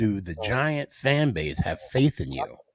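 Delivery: normal talking voice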